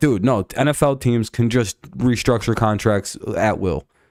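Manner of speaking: ordinary talk, nothing marked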